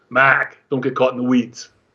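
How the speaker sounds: put-on Boston accent. Recalling a salesman's trading advice, quoting him in a boston accent. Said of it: "with a Boston accent".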